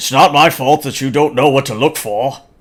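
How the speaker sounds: loud put-on Scottish accent. Voicing a card player accused of cheating: Sean Connery accent. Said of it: "Weak Ass now has Sean Connery's accent".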